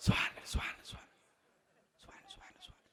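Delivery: whispered mumble. Imitating how many elders only whisper the glorification in ruku: whispered. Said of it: "অনেক মুরব্বি খালি ফিস ফিস করে".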